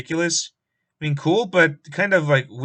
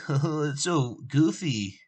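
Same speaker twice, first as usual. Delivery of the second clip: very slow, soft, mocking nerdy drawl; 5 dB quieter than usual. Mimicking what typical nerd sites say about it, mocking nerd voice. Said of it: "I hate doing that voice".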